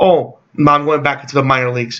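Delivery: ordinary delivery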